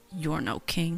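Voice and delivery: soft, eerie, dissonant, menacing half-whisper. Casting a spell on a king in a fight, half-whispering menacingly. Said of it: "I'll whisper, like, in the dissonant whisper".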